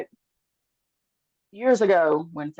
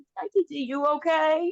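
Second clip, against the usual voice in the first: put-on slow, high-pitched toddler voice. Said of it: "Shalon's oldest would come through".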